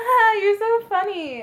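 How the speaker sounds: fake flirty giggle, high pitched and loud.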